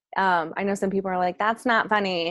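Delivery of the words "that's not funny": ordinary talk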